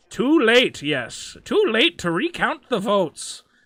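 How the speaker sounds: each word dragged out, badly. Reading out a viewer comment after agreeing to try, Yoda voice. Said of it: "I'm not gonna do a Yoda impression, but okay. All right, I'll try".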